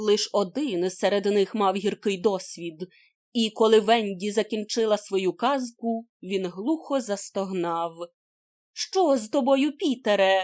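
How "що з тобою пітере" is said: worried, alarmed, concerned cry. Hearing him groan after her story, she runs to him, exclaimed. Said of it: "вигукнула Венді і підбігла до нього".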